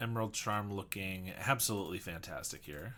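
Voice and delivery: ordinary delivery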